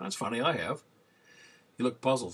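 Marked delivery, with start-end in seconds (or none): 0.0-0.8 wry, pointed, sarcastic delivery. Retelling a reply to a church member about an absent man: retelling own sarcastic remark. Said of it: "I probably sarcastically said".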